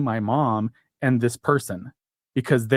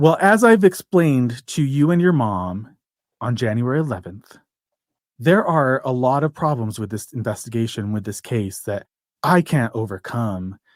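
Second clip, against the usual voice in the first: mock very condescending, patronizing, talking-down tone. Retelling what an attorney said on a call: imitating a condescending tone. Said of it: "took a very condescending tone with me".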